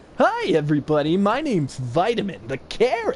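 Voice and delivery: high cartoon character voice. Explaining why he would choose to be a carrot, Vitamin the Carrot voice. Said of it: "I could even do a voice like".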